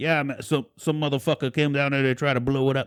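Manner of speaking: put-on thick New England accent. Retelling what a guy at a lab said: thick New England accent. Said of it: "he's talking with his thick New England accent".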